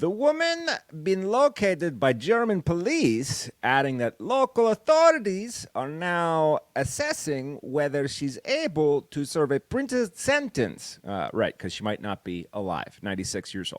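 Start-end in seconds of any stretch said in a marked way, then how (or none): 0.0-11.0 clumsy, bad German accent, pitched up. Reading a spokesperson's quote aloud from a news story: butchered german accent. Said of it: "sorry I butchered that German accent".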